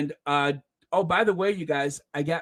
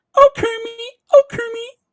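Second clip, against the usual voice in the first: very high, loud, squealy calling-out voice; 12 dB louder than usual. Speaker, talking about Santa Claus images, breaks into Miss Piggy voice. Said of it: "as Miss Piggy would say".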